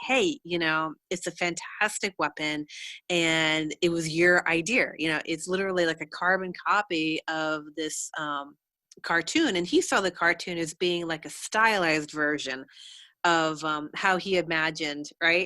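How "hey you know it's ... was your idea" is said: normal talking voice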